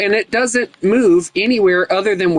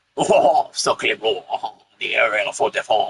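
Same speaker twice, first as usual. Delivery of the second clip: fake French accent, lower and quieter; 10 semitones lower, 4 dB quieter than usual. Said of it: "make a, a, a French accent right quick".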